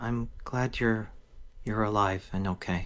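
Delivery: very quiet, soft, hushed words. Voicing a character hugging someone back from danger: very quiet voice. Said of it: "she just very quietly says".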